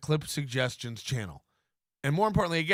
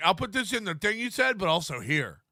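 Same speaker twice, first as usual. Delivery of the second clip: put-on mocking, teasing send-up voice. Retelling what fans write in messages: imitating fans. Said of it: "Going like".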